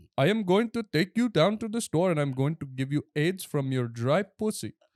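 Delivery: loud, high-pitched, put-on Indian accent. Asked by someone to let them hear it, put-on Indian accent. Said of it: "let me hear your Indian accent".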